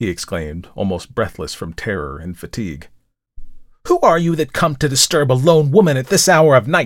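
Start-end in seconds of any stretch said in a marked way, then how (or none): 3.9-6.9 sharp, high, cried-out voice. From above, a woman answers a man begging to be let in at night: sharp cry. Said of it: "cried a sharp voice from above".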